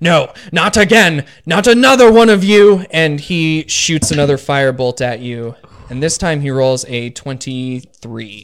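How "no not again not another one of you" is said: very loud, pitched-up, desperate scream of despair. Narrating a tabletop game fight, voicing an enemy who screams at the player. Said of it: "So he screams at you again".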